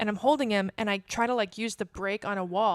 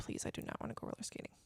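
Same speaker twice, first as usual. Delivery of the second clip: put-on pleading, begging voice, quieter. Retelling begging a boyfriend not to go roller skating: imitating own begging. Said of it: "and I begged him".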